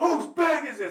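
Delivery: very high, very loud shouting. Retelling getting questioned about a bag in their luggage: retelling a yell. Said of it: "They keep yelling".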